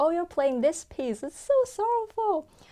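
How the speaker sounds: high, bright, cheerful voice. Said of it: "he cheerfully replied".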